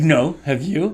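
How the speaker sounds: mock sharply on-the-defensive, very defensive reply. Retelling how she answered a question about prayer: imitating a defensive reply. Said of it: "very defensively, like".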